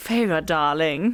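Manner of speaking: slow, low-pitched condescending purr. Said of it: "bit condescending".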